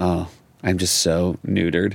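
ordinary talk

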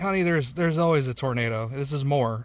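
plain

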